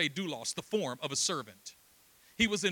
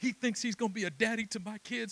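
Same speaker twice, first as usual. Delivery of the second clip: mock crying in a man's voice, much higher; 4 semitones higher than usual. Retelling what a crying man sitting beside him said, imitating a man crying. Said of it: "And he's crying".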